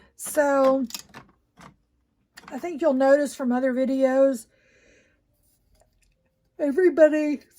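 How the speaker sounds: talking through a yawn. Explaining tape tools during a tumbler demo, yawning while talking. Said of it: "I'm sorry, I'm yawning".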